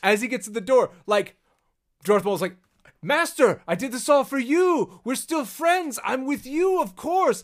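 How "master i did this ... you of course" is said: high, loud, groveling pleading tone. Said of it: "Why are you groveling?".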